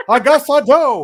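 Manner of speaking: put-on old Hollywood drawl. Retelling a hesitant actor's words: terrible Jimmy Stewart impression. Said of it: "my terrible Jimmy Stewart impression".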